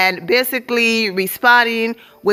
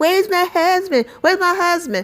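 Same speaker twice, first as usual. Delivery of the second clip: put-on, high, repeated shrieking; 7 semitones higher than usual. Retelling how a cast member screamed about her husband: imitating someone screaming. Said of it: "this clown was screaming".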